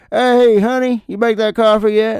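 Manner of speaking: put-on high old prospector voice, talking through an underbite. Retelling one's own greeting at home, in an old prospector voice. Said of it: "like a old prospector".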